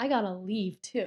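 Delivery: ordinary delivery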